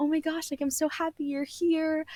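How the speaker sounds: sunny, overly glad, high customer-service voice. Showing how you sound when emailing people for your nonfiction, in a customer service voice. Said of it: "like having a customer service voice".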